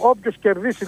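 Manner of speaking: normal talking voice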